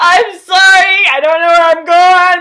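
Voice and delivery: acted very high, very loud tearful sobbing. Retelling a phone call to the guy while lost, acting out own crying. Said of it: "I just started crying on the way there".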